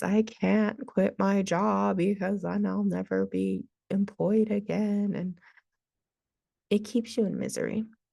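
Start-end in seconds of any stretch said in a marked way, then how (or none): none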